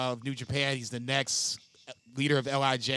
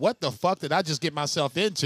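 ordinary talk

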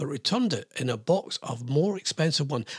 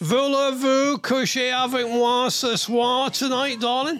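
put-on Cockney accent laid over the words; 9 semitones higher, 4 dB louder than usual. Repeating a chat-up line once used in glasgow: cockney accent. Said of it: "I said it in a Cockney thing".

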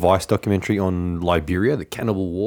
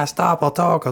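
mock terrified voice, much higher, slower; 9 semitones higher than usual. Recounting a scene where a man is kicked and threatened, mock-terrified plea. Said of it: "the terror in his voice".

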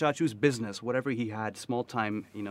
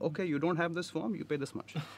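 put-on Indian accent, higher and quieter; 5 semitones higher, 5 dB quieter than usual. Quoting a property manager to the other speaker, in an indian accent. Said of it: "And that Indian accent".

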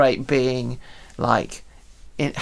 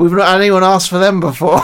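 put-on strong West Country accent, higher and louder; 5 semitones higher, 8 dB louder than usual. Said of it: "he had a strong sort of West Country accent".

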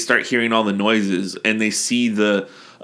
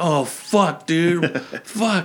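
mock terrified, high, very slow, drawn-out moan; 7 semitones higher than usual. Speaker describing characters hearing a cadaver banging, mock-terrified. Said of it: "they're scared as fuck".

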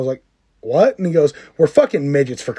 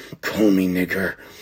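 fierce, aggressive, hushed half-whisper; 8 semitones lower, 5 dB quieter than usual. Retelling what a friend half-whispered, leaning close: imitating an aggressive half-whisper. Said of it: "leaned really close to me and whispered aggressively".

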